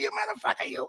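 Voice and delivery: breathy, out-of-air, short-of-breath whisper. Joking about running out of air: Joe Pesci impression. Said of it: "I find myself talking like Joe Pesci".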